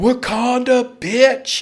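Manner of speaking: play-acted, high, excited whooping yell. Retelling a yell that woke someone up: retelling a yell. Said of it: "because I yell".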